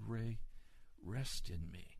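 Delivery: gentle, kind voice. Speaker retells being called by name one night, retelling a kind, gentle voice. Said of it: "in a very kind and gentle voice".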